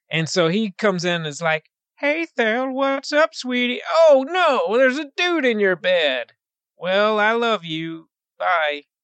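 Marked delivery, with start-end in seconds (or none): 2.0-8.8 put-on bad country accent, higher pitched. Retelling a movie scene, imitating Gabriel Byrne's terrible country accent. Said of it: "His country accent".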